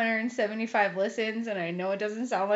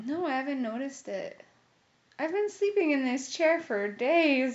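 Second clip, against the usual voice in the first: near tears, words drawn out; 4 semitones higher than usual. Someone who's slept in a chair for days replies, on the verge of tears. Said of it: "you were about to start crying at the end of that sentence".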